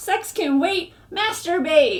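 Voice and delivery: sudden, loud, mock shouted yell. Bringing up what a kid yelled in health class, retelling a yell. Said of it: "why are you yelling that?".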